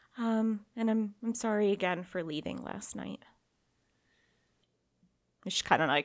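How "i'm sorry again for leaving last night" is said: shamefaced, ashamed tone, quieter. Voicing a character apologizing for leaving last night: ashamed apology. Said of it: "real ashamed".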